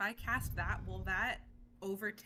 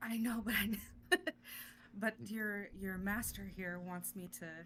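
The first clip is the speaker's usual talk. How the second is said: whispered voice. Speaking to the tiger while its master is right there: whispering to the tiger. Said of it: "I'm gonna whisper to the tiger".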